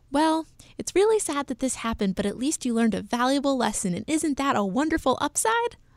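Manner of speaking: high-pitched, cheerful voice. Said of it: "my mom's cheerful voice going".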